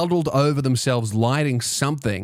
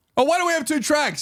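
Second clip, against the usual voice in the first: very high, shrill yelling woman's voice. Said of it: "she's yelling at this guy".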